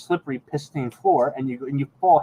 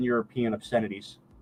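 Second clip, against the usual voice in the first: ordinary talk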